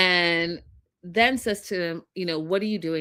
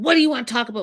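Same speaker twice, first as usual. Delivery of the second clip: put-on snippy attitude, higher, louder, faster; 6 dB quieter than usual. Retelling a man's reply to a frustrated woman wanting to talk, mimicking his attitude. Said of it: "With an attitude".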